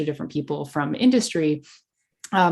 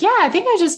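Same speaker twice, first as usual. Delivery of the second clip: much higher, louder voice. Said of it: "and I was like".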